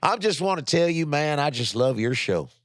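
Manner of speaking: put-on Southern accent with fake drawl. Doing any southern accent for a line practice: put-on southern accent. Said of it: "I'm just doing any Southern accent".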